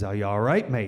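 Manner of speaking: put-on pirate voice. Retelling what a boat captain said to him, in a pirate voice. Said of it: "so I just do pirate".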